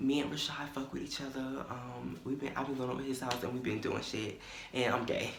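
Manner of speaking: barely audible, very quiet half-whisper. Retelling telling a secret in a classmate's ear: imitating own half-whisper. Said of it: "I whisper in this bitch ear, like, so fucking quietly".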